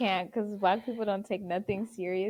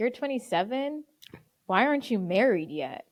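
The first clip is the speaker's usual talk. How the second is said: put-on disgusted tone. Retelling what a brother asked on sunday: imitating brother's disgust. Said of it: "just utmost disgust".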